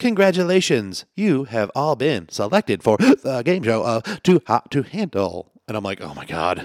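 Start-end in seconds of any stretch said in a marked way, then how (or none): 0.0-5.5 loud, high-pitched, very robotic voice. Describing a device popping out of an Escalade's roof to announce the show, very robot voice. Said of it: "like this very robot voice".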